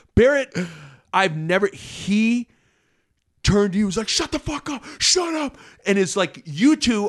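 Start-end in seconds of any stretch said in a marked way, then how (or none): 4.1-5.6 mock heated scream, snapped out very high. Retelling how a teammate turned to another player, imitating someone screaming. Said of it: "he's screaming at you".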